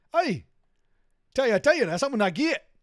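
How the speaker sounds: put-on wild, hard-to-follow Geordie accent, loud and high. Retelling a local guy's reply about going to a club, in a crazy Geordie accent. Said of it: "we get this crazy Geordie accent".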